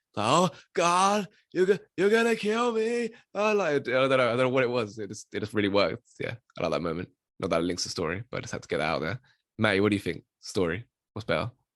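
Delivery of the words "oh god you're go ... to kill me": mock American accent, pitched higher. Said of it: "he does this, like, American accent, which, like, is, like, really fake".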